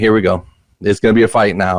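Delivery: normal talking voice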